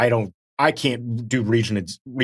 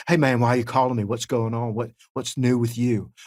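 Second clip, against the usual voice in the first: talkative acted voice. Retelling a phone call, imitating Brad Leland. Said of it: "I just wanted to hear your voice so I can do my impression".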